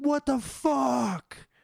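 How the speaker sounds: mock very high, raspy, rough shriek. Retelling waking in the night in pain: imitating own scream. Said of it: "so I just wake up screaming".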